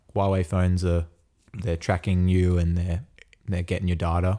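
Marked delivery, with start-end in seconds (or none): none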